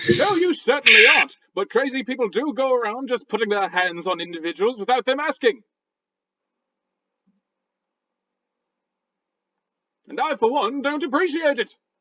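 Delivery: angry, irate put-on British accent. Replying to someone insisting they're not crazy, in an angry British-sounding voice. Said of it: "angry British sounding talk".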